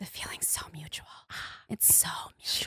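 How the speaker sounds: breathy, barely voiced, very quiet close whisper. Praised as beautiful by another speaker on the show, she answers whispering. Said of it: "She whispers, you guys".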